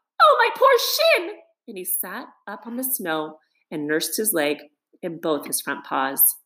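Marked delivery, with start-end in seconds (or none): 0.2-1.4 very high, hurting outcry. Narrator reads the mole after he trips and falls in the snow; crying out in pain. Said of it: "He cried".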